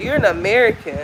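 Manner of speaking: normal talking voice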